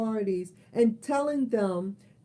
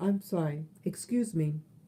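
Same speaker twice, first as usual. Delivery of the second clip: ordinary talk, nothing marked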